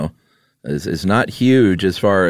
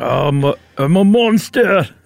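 put-on Scottish accent, much higher pitch; 11 semitones higher than usual. During a guessing game, Groundskeeper Willie voice. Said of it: "that was a groundskeeper Willie".

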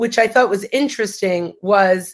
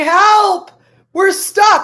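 put-on screaming, higher and louder; 11 semitones higher, 5 dB louder than usual. Retelling a video where two people stuck on an escalator scream: imitating people screaming for help. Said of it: "they start screaming".

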